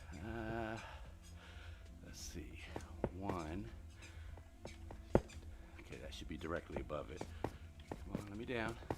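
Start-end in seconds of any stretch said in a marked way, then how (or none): 7.4-8.7 out of breath, winded, soft whisper. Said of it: "Why you sound like you're at gunpoint".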